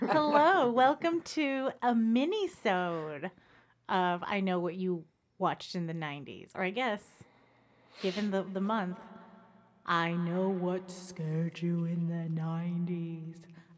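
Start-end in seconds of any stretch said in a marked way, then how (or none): 9.9-13.4 eerie, spooky, scary horror-show voice. A host welcomes listeners to a mini-episode of the show; scary voice. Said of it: "I'm working on my scary voice".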